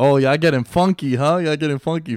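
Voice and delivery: loud, high, hollered yell. Retelling how Serge yelled during wrestling: imitating Serge yelling. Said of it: "Serge is yelling".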